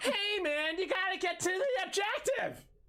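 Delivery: very high, slow, laid-back half-stoner drawl. Pitching how a character should deliver voice lines, semi-stoner voice. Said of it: "Make him like a semi stoner".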